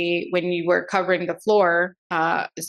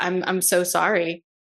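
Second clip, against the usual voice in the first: acted sobbing while talking, slower. Retelling a phone call from the emergency room, reenacting her own sobbing apology. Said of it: "I started sobbing over the phone".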